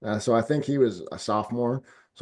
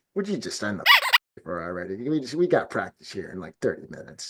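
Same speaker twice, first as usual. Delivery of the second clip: put-on impatient coach voice. Imagining a coach in the background of a signing: imitating Bill Belichick impatient. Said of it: "You could just hear him and just be like".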